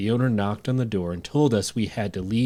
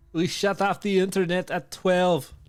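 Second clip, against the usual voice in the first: bad Scottish accent, very high, very slow; 9 semitones higher than usual. Reading a story about a Scottish B and B owner: attempted Scottish accent. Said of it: "What the fuck kind of accent was that?".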